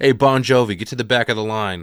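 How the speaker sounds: put-on hollering in thick Boston accent. Retelling a movie scene, a man at the barricade: imitating Lonnie yelling. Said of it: "yelling at Lizzie at the front".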